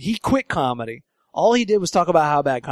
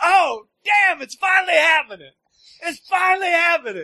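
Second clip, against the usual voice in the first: put-on excitement, much higher pitch; 12 semitones higher than usual. Retelling a guy's reaction to getting booked on a show, imitating Kevin getting excited. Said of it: "He's getting all excited".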